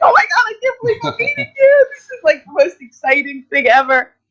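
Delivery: put-on starstruck fangirl gushing, very high and swooping. Retelling meeting someone at a convention, imitating gushing excitement. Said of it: "I just kind of fangirled all over him".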